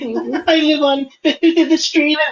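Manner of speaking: quavering put-on tremble, very high pitch. Mimicking a woman putting on an act in front of the judge, imitating a put-on shaky voice. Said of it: "the whole shaky voice".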